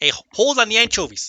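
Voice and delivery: put-on New York accent. Teasing Dave that his accent is fake, the speaker keeps imitating Dave's accent. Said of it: "Let me do your accent".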